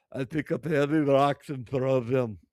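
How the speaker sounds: heavy put-on Russian accent, very loud. Retelling what a woman says she does for fun: thick russian accent. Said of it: "she says in a thick Russian accent".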